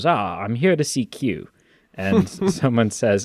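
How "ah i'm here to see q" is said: slow, unhurried, put-on English accent. Retelling a man's line, imitating his English accent. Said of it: "He does an English accent".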